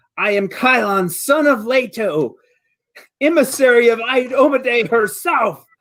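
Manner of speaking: very high, slow screaming war cry. Voicing a character spouting off at a foe mid-combat: screaming in character. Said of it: "as he's screaming at the thing now".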